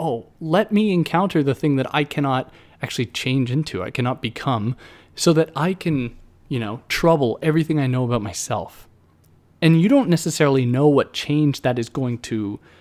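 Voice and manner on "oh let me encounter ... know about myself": ordinary talk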